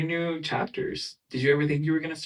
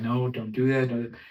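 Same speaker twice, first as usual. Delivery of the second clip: super calm, mild, even, unbothered fatherly tone; 3 semitones lower than usual. Describing a type of dad who stays calm outside, imitating a super calm dad. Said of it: "he's like super calm".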